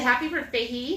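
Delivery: ordinary talk, nothing marked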